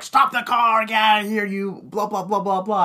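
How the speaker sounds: angry, high-pitched, yelling rant. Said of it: "starts cursing at Jeff".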